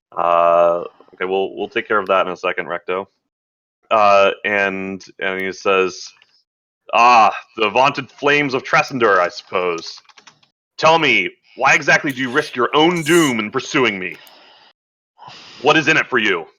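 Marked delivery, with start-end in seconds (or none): 7.0-16.4 lofty, imperious commanding voice, pitched up. Voicing a drow who steps up into the group's mix, booming, commanding voice. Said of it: "he kind of has this booming, commanding voice".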